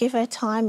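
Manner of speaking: ordinary delivery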